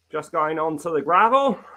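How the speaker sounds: hint of Australian accent. A podcast host talking about group rides, with almost an Australian accent. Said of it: "that's almost an Australian accent coming out".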